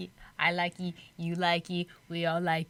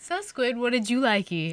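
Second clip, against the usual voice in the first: plain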